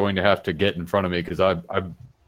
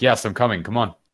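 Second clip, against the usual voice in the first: impatient, hurried, urgent tone; 2 semitones higher than usual. Playing a character who hurries someone along: impatient, hurrying someone along. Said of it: "trying to hurry her along".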